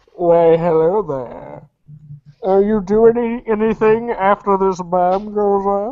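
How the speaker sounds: put-on seductive villain voice. Teasing a friend's Bane impression, speaker does his own, mock-seductive Bane voice. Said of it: "make Bane sound like he's trying to be sexy".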